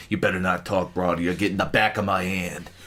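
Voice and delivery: deep, very low hardboiled noir detective voice. Voicing a cop who turned into a noir guy: noir detective voice. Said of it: "this noir guy who's like".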